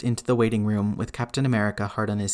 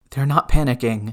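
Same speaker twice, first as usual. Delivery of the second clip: panicking; 2 semitones higher, 4 dB louder than usual. Two people wait for news of someone who passed out; panicking. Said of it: "absolutely panicking".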